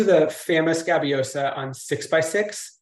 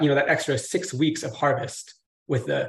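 plain

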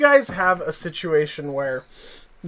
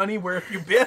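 put-on, weepy, tearful crying voice; 5 dB quieter than usual. Acting out a made-up scene where Mom comes up: imitating a crying mom. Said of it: "Mom comes up and she's crying".

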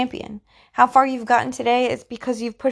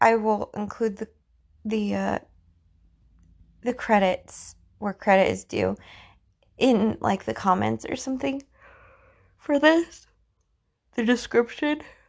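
talking through a yawn. Speaker talks to viewers, then apologizes for yawning; yawning. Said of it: "I'm yawning".

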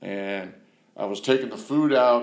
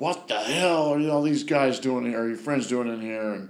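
mock angry, pissed-off outburst, higher pitch; 2 semitones higher than usual. Retelling a woman's reaction to finding his friends there: mock-pissed outburst. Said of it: "She was just pissed".

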